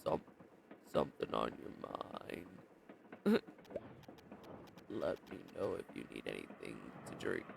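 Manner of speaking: very quiet, deepened voice. Storyteller voicing a character's greetings: deeper voice. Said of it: "I'll try to do his greetings in a deeper voice".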